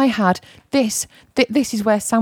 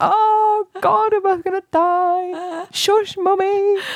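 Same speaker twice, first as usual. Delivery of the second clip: very high, very slow, quivering, fearful voice; 11 semitones higher than usual. Retelling hushing mummy about a scary stranger: imitating own fearful past self. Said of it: "I used to be quivering with fear".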